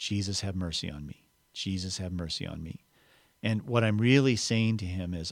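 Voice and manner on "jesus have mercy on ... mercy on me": murmured quietly under the breath, lower and quieter. Showing how to pray a short phrase all day: said under the breath. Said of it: "I will say under my breath".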